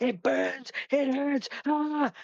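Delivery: anguished, very high, shrill, drawn-out pained wail. Retelling a man in a regression session screaming: imitating someone screaming in pain. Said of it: "he started screaming and going".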